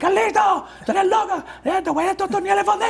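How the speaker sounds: high, shouted, scolding woman's voice.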